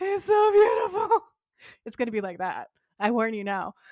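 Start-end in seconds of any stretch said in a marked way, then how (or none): 0.0-1.2 high, loud emotional gush. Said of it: "we were just like".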